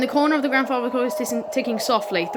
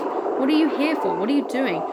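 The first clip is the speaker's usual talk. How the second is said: ordinary delivery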